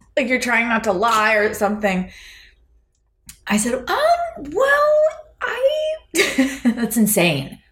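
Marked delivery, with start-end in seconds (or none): 3.8-6.0 very high-pitched, awkward, hesitating um. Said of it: "your voice goes all high".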